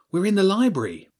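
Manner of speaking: loud, high-pitched stage whisper. James answers Hugo's booming greeting in the library, in a loud whisper. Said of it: "James whispered loudly".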